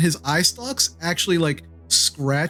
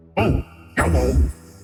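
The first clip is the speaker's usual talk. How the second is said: thick, bubbling, burbling creature voice; 11 semitones lower than usual. Narrator voicing a creature heard in the listener's mind: thick, burbling voice. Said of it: "a thick, burbling voice say".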